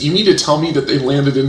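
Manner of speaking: usual speaking voice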